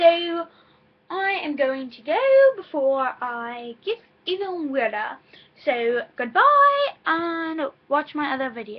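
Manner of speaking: very loud, slow put-on British accent. Signing off and asking viewers to watch other videos: put-on British accent. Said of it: "now I am talking in a British accent".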